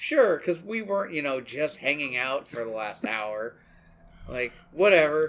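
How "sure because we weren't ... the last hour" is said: ordinary talk, nothing marked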